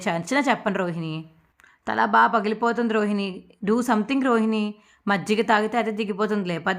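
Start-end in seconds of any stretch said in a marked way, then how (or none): none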